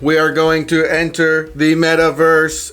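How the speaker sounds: robotic voice. A show host tells the co-host where they are going; robot voice. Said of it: "I don't know why I have to talk like a robot".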